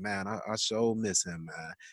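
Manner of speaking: earnest, sincere, heartfelt tone. Retelling what Moms said after a documentary: imitating Moms, sincerely missing him. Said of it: "like it was somebody she knew".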